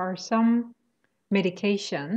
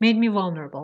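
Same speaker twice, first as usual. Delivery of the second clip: stress on vul, first syllable of vulnerable; 4 dB louder than usual. Correcting the other speaker's phrase made me vulnerable: stress on first syllable of vulnerable. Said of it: "The stress is on the first syllable".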